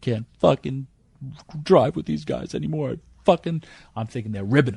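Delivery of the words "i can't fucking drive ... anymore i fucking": high-pitched mock blubbering, bawling crying outburst. Retelling how a man who came in bawling his eyes out spoke: imitating someone bawling. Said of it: "He's bawling his eyes out".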